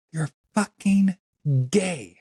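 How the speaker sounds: high, screamed outburst.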